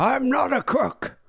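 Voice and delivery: stretched-out, very high put-on voice. Joking about the other speaker's Nixon voice: Richard Nixon voice. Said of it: "I made him sound like Richard Nixon".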